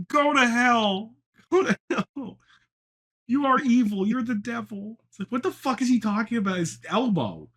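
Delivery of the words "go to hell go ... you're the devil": agitated, freaked-out, slow delivery with each word dragged. Retelling Jordan Peterson's reaction to Elmo: imitating Jordan Peterson freaking out. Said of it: "him freaking the fuck out".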